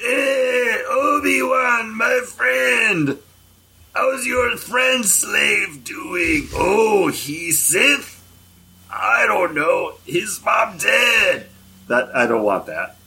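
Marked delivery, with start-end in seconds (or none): 0.0-11.5 very high-pitched, drawn-out creature voice. Describing a worst-case scenario where Watto returns, Watto impression. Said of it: "that was my Watto impression".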